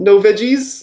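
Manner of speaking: high, loud voice with Japanese accent.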